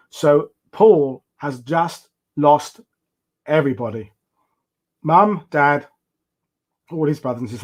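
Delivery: choked up, slow, heavy with feeling. Telling a story not told in a long time, getting a bit emotional. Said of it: "I'm getting a bit emotional now".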